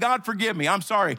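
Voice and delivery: normal talking voice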